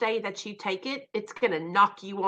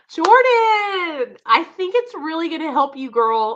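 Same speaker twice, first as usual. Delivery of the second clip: raised, high, tearful crying voice; 8 semitones higher, 8 dB louder than usual. A recovery livestream host speaks to a guest named Jordan: crying while speaking. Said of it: "I'm all crying".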